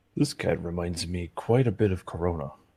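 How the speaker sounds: whispered, in a character voice. In a tabletop game, Oberon whispers to Corin: Oberon whispering. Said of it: "Oberon whispers to Corin".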